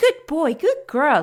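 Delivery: high-pitched, rewarding praising tone. Demonstrating voice cues for a horse, rewarding it in a high pitch. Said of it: "high pitch for like rewarding".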